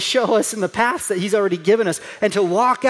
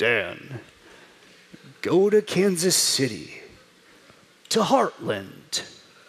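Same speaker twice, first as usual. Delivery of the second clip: very deep, very slow, drawn-out voice; 5 semitones lower, 5 dB quieter than usual. Imagining God speaking audibly about a future decision: James Earl Jones impersonation. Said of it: "my best James Earl Jones impersonation".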